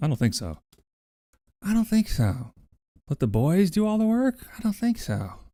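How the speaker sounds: deliberately awful, high-pitched celebrity voice. Denying that you are an overlord, in a terrible Holly Hunter impression. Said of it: "the worst Holly Hunter impression of all time".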